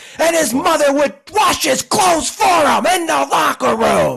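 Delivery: very high, loud, hyped play-by-play announcer call. Describing a college football player's habits, doing a Gus Johnson impression. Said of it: "not a terrible Gus Johnson impression in terms of the cadence".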